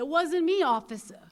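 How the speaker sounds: put-on shrill, high, loud Brooklyn accent. Retelling her boyfriend lying to the cops, in a brooklyn accent. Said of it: "he's got that Brooklyn accent".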